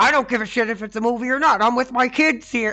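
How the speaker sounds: mock angry yell, shrill, very high and very loud. Retelling how a father stood up to a disruptive man: imitating an angry father. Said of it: "the father's like".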